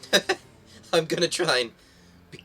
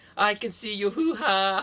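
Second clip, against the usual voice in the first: put-on Hawaiian accent attempt, higher pitched; 9 semitones higher than usual. Trying a Hawaiian accent when asked, quoting a line: Mila Kunis impression. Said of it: "Mila Kunis going".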